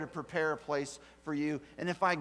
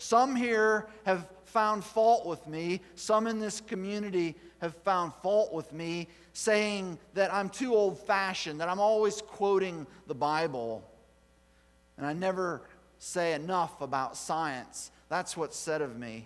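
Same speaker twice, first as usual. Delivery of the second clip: normal talking voice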